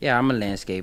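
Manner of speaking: ordinary talk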